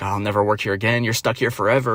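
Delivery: acted unhinged outburst, woman's voice. Retelling a woman in a store who lost her mind at people; imitating an unhinged outburst. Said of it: "she like fucking lost her mind".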